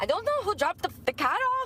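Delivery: put-on Irish accent. Retelling what a woman from Ireland said, imitating her Irish accent. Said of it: "She had an Irish accent".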